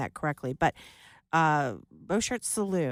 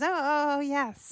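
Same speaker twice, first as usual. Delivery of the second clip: put-on awkward tone, higher pitch; 9 semitones higher than usual. Retelling how someone answered the kid's greeting: imitating an awkward reply. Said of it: "she sort of awkwardly goes".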